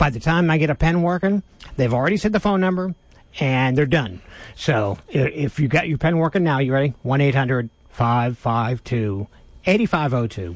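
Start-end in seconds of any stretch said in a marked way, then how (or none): 7.0-10.6 slow delivery, much lower pitch. Reading out the phone number so listeners can write it down, said slowly. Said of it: "I'm going to say it slow".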